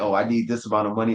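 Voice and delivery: plain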